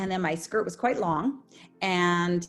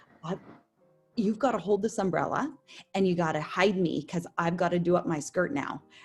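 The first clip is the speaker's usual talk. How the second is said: imitated whispering. Retelling hiding behind an umbrella on stage with a fellow performer: retelling a whisper. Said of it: "I'm whispering to him".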